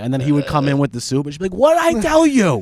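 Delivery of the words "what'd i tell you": mock furious, angry mother voice, higher. Retelling a mom scolding the uncle for bringing soup: imitating a furious mom. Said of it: "it made my mom too furious".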